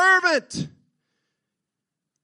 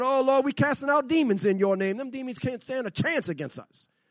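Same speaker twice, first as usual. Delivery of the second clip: usual speaking voice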